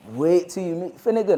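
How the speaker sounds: ordinary delivery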